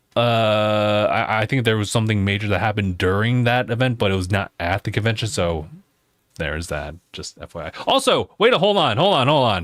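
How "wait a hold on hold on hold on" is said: shouting, higher pitch. Interrupting own explanation to stop everybody, yelling. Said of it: "Sorry for yelling at everybody".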